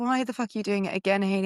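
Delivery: ordinary delivery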